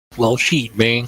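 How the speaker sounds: bad, fake put-on American accent. Chatting with strangers in a game, bad put-on American accent. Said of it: "You're trying to do an American accent".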